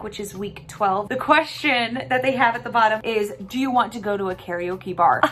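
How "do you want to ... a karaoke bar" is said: normal talking voice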